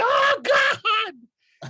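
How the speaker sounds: very high, very loud, shrill scream. Acting out a character screaming from a throbbing headache: screaming. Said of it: "I screamed".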